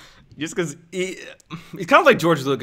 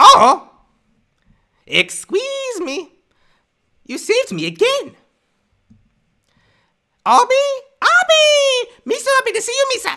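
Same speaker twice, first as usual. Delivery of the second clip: very high, loud, squeaky, goofy creature voice; 5 dB louder than usual. Showing off the Star Wars impression they've been told is good: Jar Jar impression. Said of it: "I have a good Jar Jar one".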